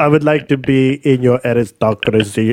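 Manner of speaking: put-on Russian accent. Asked by another speaker to say a word with an accent, russian accent. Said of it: "That was my Russian accent".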